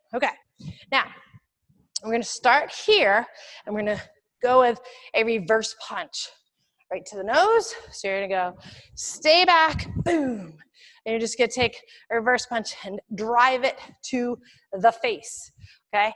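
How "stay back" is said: firm, loud, high-pitched forceful commanding tone. Showing a self-defense move with the words: forceful command. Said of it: "Say it like you mean it".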